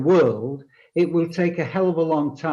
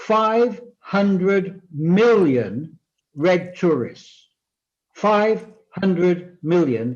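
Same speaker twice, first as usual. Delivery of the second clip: very slow, deliberate, drawn out word by word. Speaking to an audience, giving a figure very slowly. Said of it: "I'm going to say this very slowly".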